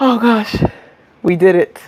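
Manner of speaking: breathless, winded, out-of-breath voice. Finishing a counted exercise routine with viewers, out of breath. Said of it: "I'm like out of breath".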